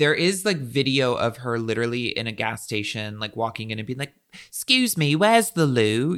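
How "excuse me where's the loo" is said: fake British accent, pitched high. Describing a video of a woman walking into a gas station, imitating her put-on British accent. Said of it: "she would talk in a British accent".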